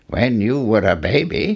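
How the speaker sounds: plain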